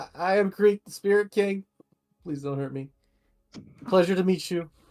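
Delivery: anxious high stuttering voice. Voicing a character who introduces himself to a powerful ruler: nervous. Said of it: "and nervously".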